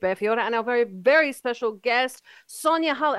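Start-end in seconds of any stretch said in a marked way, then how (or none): 2.5-3.2 short-winded, breathless delivery. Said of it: "I can't even get my breath now".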